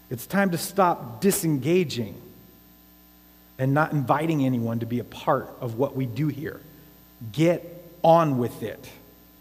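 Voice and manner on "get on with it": firm, stern, no-nonsense voice. Preacher urging the church to take part, in stern Nehemiah voice. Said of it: "That's my Nehemiah voice".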